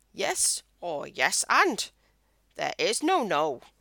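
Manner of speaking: put-on wise old alien sage voice. Speaker quotes an improv saying, then does a Yoda impression. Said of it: "That's my Yoda impression".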